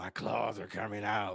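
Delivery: very low, deep, hushed, muttered brute voice. Showing the other speaker how this overrated character sounds to you, horrible Wolverine impression. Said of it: "horrible rendition of Wolverine".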